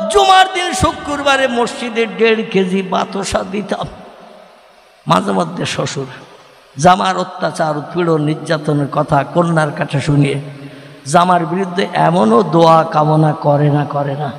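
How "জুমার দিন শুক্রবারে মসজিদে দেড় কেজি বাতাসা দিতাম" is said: high-pitched, tearful voice, crying. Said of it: "কাঁদে আর বলে".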